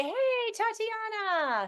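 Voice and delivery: high, slow, friendly tone.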